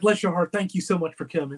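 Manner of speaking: ordinary talk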